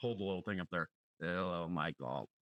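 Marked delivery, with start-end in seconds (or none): 1.2-2.2 synthesized computer voice impression. Redoing another speaker's bit, doing a Stephen Hawking impression. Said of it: "No, that's uh, Stephen Hawking".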